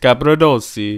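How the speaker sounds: put-on Italian accent. Reading out a new player's name, trying an italian accent. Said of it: "I just tried to get the accent on".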